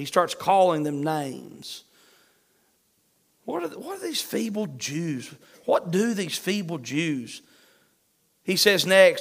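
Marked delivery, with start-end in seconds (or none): 3.4-7.4 soft, scornful, demeaning, sing-song mocking voice. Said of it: "He starts demeaning their character".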